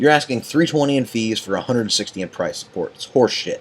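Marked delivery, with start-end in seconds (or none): none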